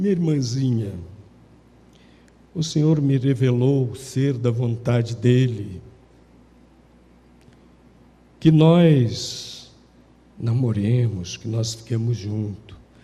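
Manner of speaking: low, put-on, pious, churchy preaching tone. Imitating a man's pitch to a young woman: mock-spiritual voice. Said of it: "falava com aquela voz espiritual".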